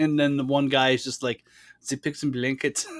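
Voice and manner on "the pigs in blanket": weird put-on German accent. Quoting one of the nihilists ordering breakfast, in a weird German accent. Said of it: "in that weird German accent".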